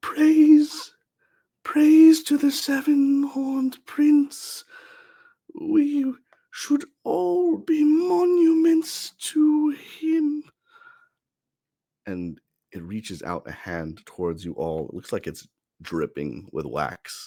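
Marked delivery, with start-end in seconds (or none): 0.0-10.4 uncanny, very high-pitched, shrill, drawn-out creature voice. Game master voicing a creature as it speaks to the party: eerie high-pitched voice. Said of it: "you hear it saying in a eerie, high pitched voice".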